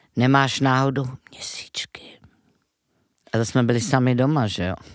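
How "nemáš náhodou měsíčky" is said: whisper, slower pace. Retelling how mom always asked this when they were home alone, whispering like mom. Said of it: "máma to vždycky šeptala".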